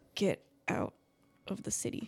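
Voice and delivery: breathless whisper. Voicing a wounded character urging a player to leave: gasping whisper. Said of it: "it kinda comes out a little bit, like, gasping".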